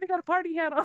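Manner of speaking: high, fast, excited gushing. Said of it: "there's those that are like".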